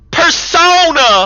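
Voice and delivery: put-on very high, shrill, loud, mangled southern accent. Recalling a game character's line delivery: southern, badly pronounced 'persona'. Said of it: "it's so southern and so just not well pronounced".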